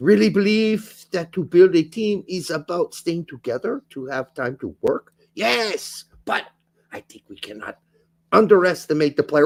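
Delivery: put-on German accent. Reading out a football manager's quote: German accent as Poch. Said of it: "your German accent for Poach".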